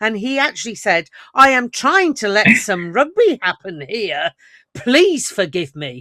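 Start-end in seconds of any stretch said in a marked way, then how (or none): 1.3-6.0 put-on dripping, heavy sarcasm with swooping pitch. Retelling what he said to the players, in mock heavy sarcasm. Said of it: "In a very heavily sarcastic manner".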